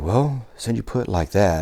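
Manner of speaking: speaking very softly. Retelling a student's reply after being pushed: imitating someone talking very soft. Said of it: "He just talked very soft".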